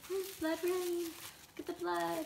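high, happy, cheerful sing-song delivery.

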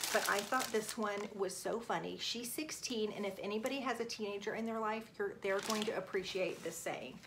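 soft, hushed talk. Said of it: "I'm gonna talk a little bit quietly so she doesn't hear".

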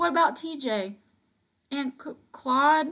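high, halting stammer, words catching. Narrator voicing Christopher John as Mama returns from the field, stammering. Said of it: "stammered Christopher John".

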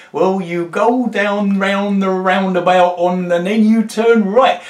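put-on strong north Norfolk farmer accent. Retell how a farmer gave directions to your lost group, in a very northern Norfolk accent. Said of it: "he said in a very northern Norfolk accent".

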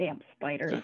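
very quiet, low, grumbling mutter to oneself. A player's character ignores the group, muttering to self. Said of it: "I'm just kind of muttering to myself".

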